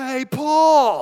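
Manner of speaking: high, loud shout from a distance. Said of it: "The shout goes like this".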